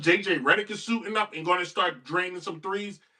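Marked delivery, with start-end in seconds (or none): none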